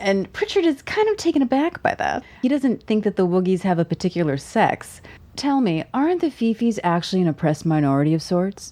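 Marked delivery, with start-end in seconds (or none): 5.4-8.7 put-on tv news anchor voice, mock newscaster delivery. Recapping a story, voicing a woman's question, in her news anchor voice. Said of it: "All in her anchor voice".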